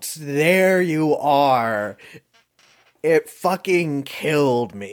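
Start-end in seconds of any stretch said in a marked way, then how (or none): 0.1-2.0 mock sudden, startling yell with "are" drawn out. Echoing a quoted movie line: imitating Nicolas Cage shouting. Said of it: "he just shouts".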